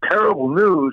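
mock really loud, high, bellowed shout. Retelling a phone call, quoting the man's reply to terrible news: retelling a really loud reply. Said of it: "he says really loud".

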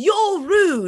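put-on screaming in a British accent. Describing what Keegan does when the ball is taken: screaming in a British accent. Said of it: "in a British accent".

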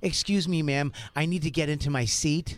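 mock goofy, weird joking voice. Retelling leaning in to ask a woman on the phone for his seat: retelling a weird joking voice. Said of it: "kind of weirdly, kind of joking around".

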